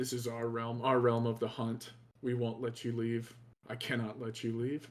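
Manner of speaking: low, deep growling voice. A game master voices a hairy foe growling at the player: low growl. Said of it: "In a low voice, he growls at you".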